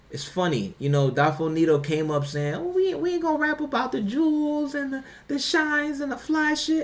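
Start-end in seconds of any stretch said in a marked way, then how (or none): 2.5-6.8 put-on very high, soft, young-sounding child voice. Retelling what Dolph Nito said when they were kids: soft voice imitating Dolph Nito. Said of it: "I'm using the, the soft voice".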